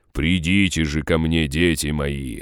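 droning, commanding demon voice. Narrator reads a towering demon's call on noticing the party; booming demon voice. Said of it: "прогудел демон".

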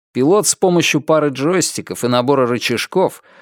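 plain

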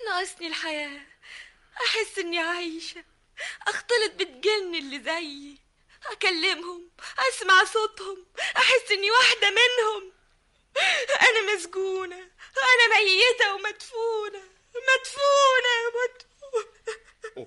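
sobbing, tearful, crying through every word. Nisan answers when asked what she is missing, crying. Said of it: "طيب بس ما تبكيش يا نيسان".

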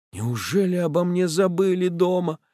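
fretful, anxious half-whisper, pitched high. Narrator reading Bulanin waiting to be fetched home, anxious half-whisper. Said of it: "шепчет в тревоге Буланин".

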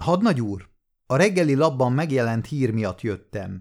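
plain

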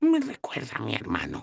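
slightly high, half-whispered stage whisper. Narrator reads a companion's remark to the first-person narrator, half-whispering. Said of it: "susurró Zoc".

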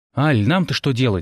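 ordinary delivery

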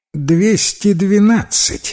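mocking, sarcastic tone. Narrator reads the sorcerer's wife correcting her husband, sarcastic correction. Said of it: "язвительно поправила его жена".

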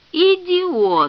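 shouting. [name] reacts to Arnold's cargo news over the radio, yelling. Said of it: "заорал Грегор".

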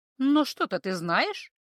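ingratiating, insinuating, cooing voice. The healer presses a frightened captive for what she knows, with an insinuating coo. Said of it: "вкрадчиво проворковала знахарка".

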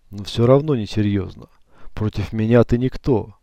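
plain reading voice

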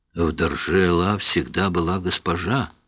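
usual speaking voice

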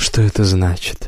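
ordinary talk

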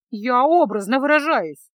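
loud, teasing voice. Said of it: "передразнила своего спутника беглянка".

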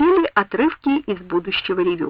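ordinary delivery

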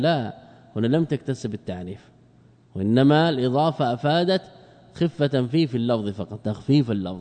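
ordinary talk

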